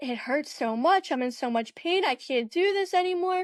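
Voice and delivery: mock crying with high sobbing pleading. Retelling breaking down in pain in front of a boyfriend: retelling crying. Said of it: "And I just broke down, like, crying".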